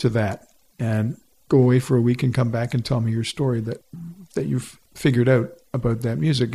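ordinary talk

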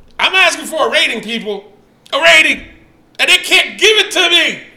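all-out, high-pitched shouting. Reading out the ratings people gave, yelling. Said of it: "Why are you yelling?".

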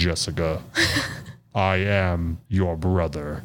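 robot villain voice, low. During a podcast drinking game, the speaker does a Darth Vader impression. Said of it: "It's like Darth Vader in the background".

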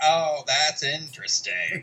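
mock-condescending, snooty voice. Recapping a movie, mocking a mom character's remark: mock-condescending. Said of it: "And she's like".

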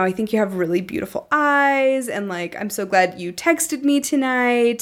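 mock-flirtatious, playful flirty tone. Retelling their own words from a first meeting, retelling flirtatious lines. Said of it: "saying it with a certain tone".

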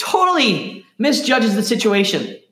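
sarcastic, swooping delivery with feigned seriousness. Telling the healing of a paralytic man: sarcastic. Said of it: "my sarcasm".

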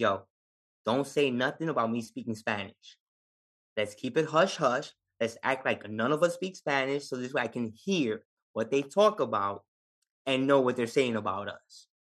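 normal talking voice

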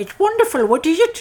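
funny voice, very high and loud, squealed. Retelling a Scrooge film scene, quoting Scrooge's reply in a funny Scrooge voice. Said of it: "he just says it in a funny voice".

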